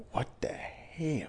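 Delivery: muttered whisper under the breath. Retelling how a student reacted to homework: imitating someone muttering under breath. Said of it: "She would be like".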